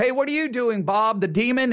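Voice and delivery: facetious, jokey, put-on casual tone. Acting out demons chatting to make a point: put-on facetious tone. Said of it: "I'm being very facetious here".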